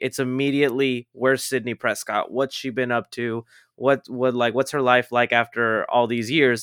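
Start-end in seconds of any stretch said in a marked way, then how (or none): none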